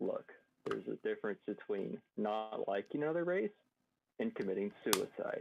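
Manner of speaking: soft, hushed, close-up half-whisper. Role-playing, walking up to a character and speaking into his ear, half-whispering. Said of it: "whisper into his ear".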